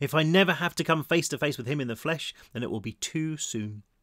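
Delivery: ordinary delivery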